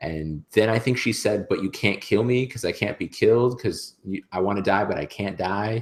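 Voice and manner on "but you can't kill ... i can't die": screaming. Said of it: "screaming at the top of her lungs".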